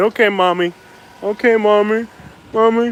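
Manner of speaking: put-on obedient little kid voice. Speaker, told it's time to go, answers like a five-year-old: pretend little kid voice. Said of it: "I'm like a little 5-year-old kid".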